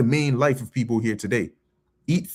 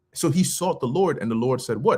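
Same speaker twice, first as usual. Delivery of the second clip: normal talking voice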